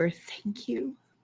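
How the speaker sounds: barely audible, soft, hushed whisper. Thanking a unicorn while touching its nose, in character: whisper. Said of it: "I'm just gonna whisper".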